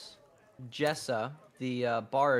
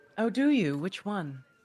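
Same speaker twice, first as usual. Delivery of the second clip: higher-pitched female character voice; 7 semitones higher, 3 dB louder than usual. As a woman tuning her instrument, answering a stranger, in a woman's voice. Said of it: "why do you have such a good woman's voice".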